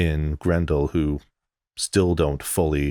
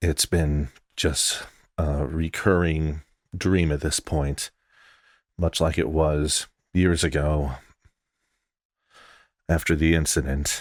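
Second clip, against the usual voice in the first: muttered under the breath after a sigh. Playing Ozzy in a role-play scene, sighing and muttering. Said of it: "lets out a sigh and mutters".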